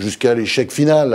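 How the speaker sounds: normal talking voice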